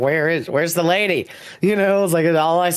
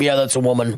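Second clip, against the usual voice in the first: put-on drunken Irish sailor voice; 3 semitones lower than usual. Joking about the lore of mermaids, put-on drunken Irish sailor voice. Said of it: "a drunken Irish sailor is like looked over the side".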